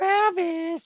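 goofy, silly put-on voice, very high. A podcast host says his co-host's name in a funny voice. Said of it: "I wanted to do it in the following voice".

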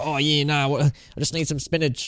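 talking like a cartoon sailor. Imitating a film character who seemed to sound like Popeye: Popeye voice. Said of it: "I thought she was trying to sound like Popeye".

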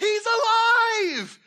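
mock excited outburst. Retelling Mary Magdalene coming to the disciples with the news, as an excited burst-in. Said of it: "like a Kramer entrance on Seinfeld into the house".

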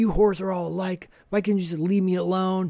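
put-on, acted-out yelling. Retelling a scene where he yells at her, retelling a yell. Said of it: "he yells at her".

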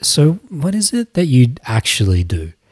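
very gentle, soft, seductive, sultry murmur. Retelling a woman's question to the speaker, mock-sultry soft voice. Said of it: "Her voice gets very gentle, very soft, very sultry".

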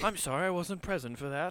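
put-on uppity polite tone. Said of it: "uppity way to say you were blacked out".

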